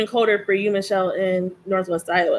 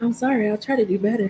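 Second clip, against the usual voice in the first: put-on voice assistant voice, quieter; 5 dB quieter than usual. Retelling what Alexa answered after a complaint: imitating Alexa. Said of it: "Alexa goes".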